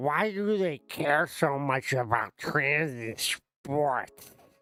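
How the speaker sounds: put-on small voice from a big voice. Guessing Danny has a big body, speaker acts him out, imitating Danny's small voice. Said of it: "big body and a small voice".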